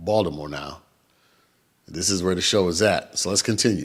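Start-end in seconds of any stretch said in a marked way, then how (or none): 0.0-0.8 "Baltimore" said locally, lower, quieter. Host correcting himself to say the city name right, local Baltimore pronunciation. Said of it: "let me say it right".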